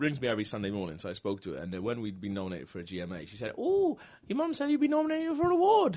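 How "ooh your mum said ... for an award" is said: put-on thickest Welsh accent, very high. Retelling what a grandmother said on the phone: imitating nan's thick welsh accent. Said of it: "she got the thickest Welsh accent".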